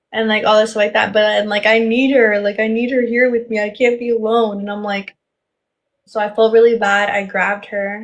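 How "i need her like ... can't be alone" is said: put-on crying and sobbing. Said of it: "He started crying".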